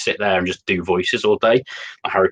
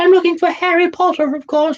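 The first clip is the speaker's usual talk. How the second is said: squeaky, very high-pitched elf voice; 4 dB louder than usual. Speaker acting out a conversation in different voices, Dobby voice. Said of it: "loads of different voices".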